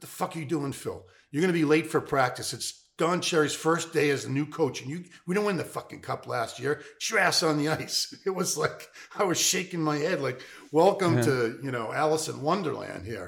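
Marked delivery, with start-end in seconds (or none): 0.0-8.1 mild, half-yelled, scolding-sounding voice. Speaker retelling Bobby walking in and yelling at Phil, retelling Bobby's yell. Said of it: "he starts yelling at Phil".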